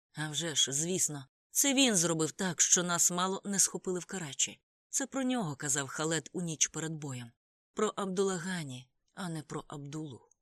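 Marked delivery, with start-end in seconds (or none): none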